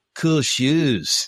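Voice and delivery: laid-back, chill surfer dude voice. Recounting a movie scene at the tip-off, doing Shawn Bradley's surfer-dude voice. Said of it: "He's got like the dude surfer voice".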